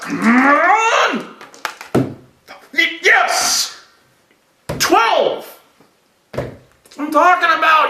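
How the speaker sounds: very slow, high, drawn-out, emotional triumphant excited yell. Showing how to roll dice with emotion: emotional excited shouting. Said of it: "You gotta put some emotion into this".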